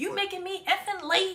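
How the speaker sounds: exasperated, irritated cussing. Complaining about parents near schools, imitating a parent cussing out a child. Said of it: "the parents cussing them out like".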